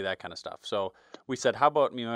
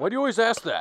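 loud, very high-pitched voice; 10 semitones higher, 5 dB louder than usual. Pretending to be Pat, asking the other speaker a question: imitating Pat. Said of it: "That's me pretending to be you".

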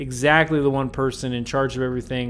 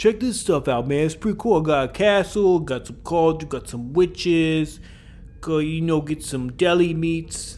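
put-on heavy, laid-on Brooklyn New York accent; 3 semitones higher than usual. A speaker recapping an episode voices Korob: Korob in a New York Brooklyn accent. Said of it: "I don't know why I'm making this New York, Brooklyn accent".

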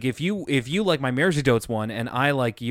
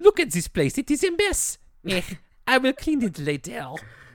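very high, swooping, exaggerated French accent; 10 semitones higher than usual. Retelling a scene with a French nanny character: exaggerated French accent. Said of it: "like a South Park character doing a French accent".

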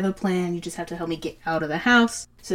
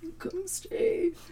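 put-on voice like a dying man; 14 semitones higher, 7 dB quieter than usual. Retelling a story's scene to listeners, in a voice like a dying man. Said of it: "It's like a dying man".

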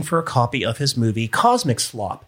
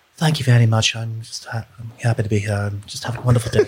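put-on soft-spoken actor voice. Act out the actor who portrays Pinhead answering your greeting, soft-spoken Bradley impression. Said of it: "he'd just be so soft-spoken".

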